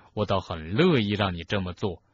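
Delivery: plain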